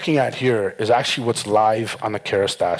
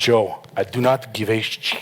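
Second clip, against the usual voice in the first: slow, drawn-out put-on Parisian French accent. Retelling what the clients told him, in a parisian accent. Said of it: "I am gonna put on a Parisian accent".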